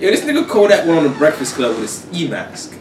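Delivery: ordinary delivery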